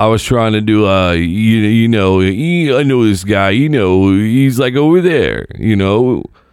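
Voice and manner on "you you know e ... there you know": New York mafia-style wise-guy voice. Showing the others the accent attempt from traffic: Rocky Balboa voice. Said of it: "ended up doing a Rocky Balboa".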